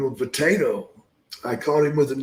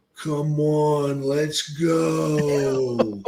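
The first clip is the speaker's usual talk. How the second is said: slurred, slow-motion, drawn-out, drugged-sounding speech. Retelling how they acted before a wrestling match against Don, talking in slow motion. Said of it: "talking in slow motion".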